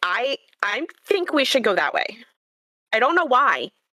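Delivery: slightly freaked-out delivery. Voicing Lyriel as she points the way, a little freaked out. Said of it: "Lyriel does seem a little freaked out".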